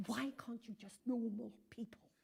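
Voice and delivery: hushed words hissed through the teeth. Retelling how his mother pulled him down to his seat, retelling a hiss. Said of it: "she hissed".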